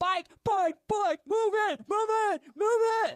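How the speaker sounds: shrill, very loud screaming. Acting out road cyclists shouting at people in their way, imitating roadies screaming. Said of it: "they start screaming at you because they're like".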